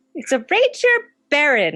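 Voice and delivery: tiny, high, sing-song, flitting fairy voice. Voicing a little fairy spinning in the air: little fairy voice. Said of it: "this little fairy kind of flies up".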